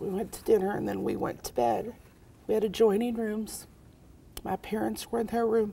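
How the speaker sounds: choked up, near tears. Telling a painful family story to a listener, choked up, near tears. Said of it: "Sorry, I'm going to cry".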